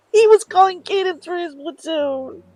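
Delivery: thrilled shrieking. Spotting him calling cadence for his platoon in the procession, excited screaming. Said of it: "sorry guys, random screaming".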